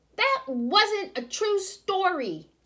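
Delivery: very high-pitched, slow calling out. A child jumps up, waving arms, while a story is told: calling out. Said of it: "Barry called out".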